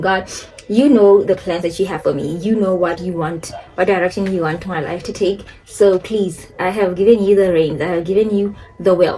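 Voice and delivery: ordinary talk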